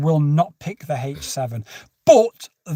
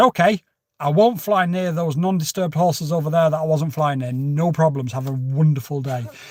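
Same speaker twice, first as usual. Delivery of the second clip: normal talking voice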